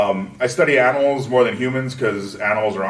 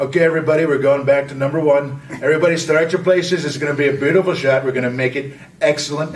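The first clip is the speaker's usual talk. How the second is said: boastful, bragging politician voice; 4 semitones higher than usual. On set, addressing everybody on the shoot, in a Trump imitation. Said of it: "doing the the Trump imitation".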